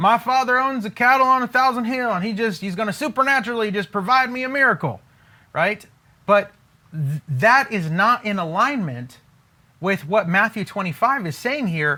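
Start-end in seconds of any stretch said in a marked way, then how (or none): 0.0-5.0 high, breezy, flippant, carefree voice. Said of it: "most believers are just like".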